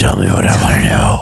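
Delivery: put-on gravelly superhero voice. Acting out a movie scene after being asked: Batman voice. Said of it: "Do it in the voice".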